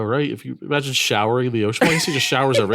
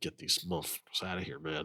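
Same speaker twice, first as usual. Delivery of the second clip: put-on muttering under breath, lower and quieter; 7 semitones lower, 16 dB quieter than usual. Imagining Roger Murtaugh with guests in the house: muttering under his breath. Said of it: "secretly under his breath".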